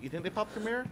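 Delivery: heavy, mock-surprised sarcasm.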